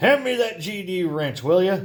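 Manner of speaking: angry, muffled voice. Someone deep inside a broken combine demands a wrench from the others; angry, muffled voice. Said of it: "An angry, muffled voice demands".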